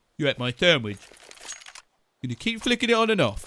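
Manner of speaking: put-on cliché stock Russian accent. Commentating a game, imagining a player's brother flicking the router, in a stereotypical russian accent. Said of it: "This isn't a stereotypical Russian accent".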